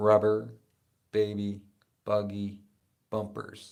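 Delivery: slow, loud delivery, each word deliberate and spaced. Demonstrating a tongue twister for the listener, saying it slowly. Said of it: "Just say it slow".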